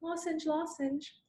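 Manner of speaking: put-on high, soft childlike begging.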